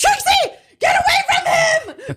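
high, laughing mock shout.

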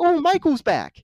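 mock gleeful, joyous cry, very high-pitched. Retelling a character greeting a friend who came back: mock-joyous greeting. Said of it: "he's so, like, happy and joyous".

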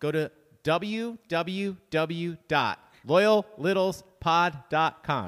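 very slow, deliberate, word-by-word spelling-out. Announcing the contest website to listeners, saying it very slowly. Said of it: "saying it so slowly".

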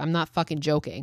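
plain

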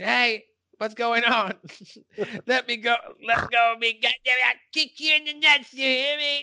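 very high-pitched screaming. Retelling a scene where agents take Cartman away: imitating Cartman screaming. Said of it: "you can hear Cartman screaming".

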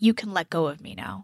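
mock mutter under breath. Retelling what a woman on the show said: imitating a mutter under breath. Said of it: "she mutters, like, under her breath".

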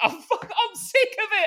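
acted very high, drawn-out, losing-it rant. Retelling a man who lost it over tier-two rules, acting out him going mental. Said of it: "he just went mental".

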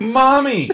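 very high, on-the-brink climax cry. Asking if the word sounded this way: imitating an about-to-climax voice. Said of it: "That was my about to spray voice".

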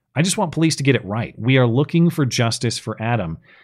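plain

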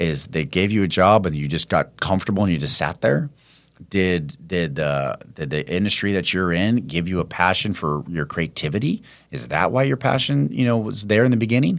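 usual speaking voice

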